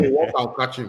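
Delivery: ordinary talk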